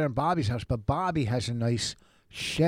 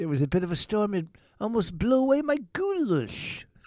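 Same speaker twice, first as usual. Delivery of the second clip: odd, high, affected put-on voice; 8 semitones higher than usual. Repeating a remark after being asked why they're talking like that, odd put-on way of talking. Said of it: "Why are you talking like that?".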